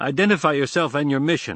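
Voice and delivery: no-nonsense, clipped voice. Narrator reads Zane demanding a patrolling soldier identify himself, curt. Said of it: "Zane said curtly".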